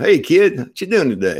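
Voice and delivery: put-on loud, easygoing Southern Illinois good-old-boy country accent. Speaker from Southern Illinois imitates how people there talk, in a Southern Illinois good old boy accent. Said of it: "where people talk like he does".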